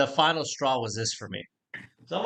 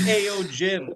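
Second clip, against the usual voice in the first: chummy, pitched-up, over-familiar calling out; 8 semitones higher than usual. Retelling how Harry greeted Jim Cramer at the stock exchange: imitating Harry. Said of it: "He goes".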